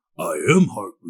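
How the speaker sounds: deep voice like a giant talking tree creature. Voicing a tree character in a tabletop game: Groot voice. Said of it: "that one sounds like Groot".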